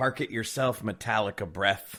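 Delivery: ordinary delivery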